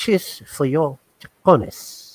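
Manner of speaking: very slow, breathy whisper. Imitating Tony Montana toasting: Tony Montana voice. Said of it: "Tony Montana say".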